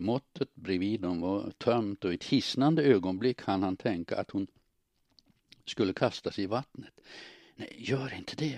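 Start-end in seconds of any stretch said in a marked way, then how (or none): 7.5-8.6 soft, half-whispered, pleading voice. He fears she will push him into the water, half-whispered. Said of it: "viskade han".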